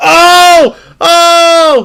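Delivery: excited, very high, loud yell.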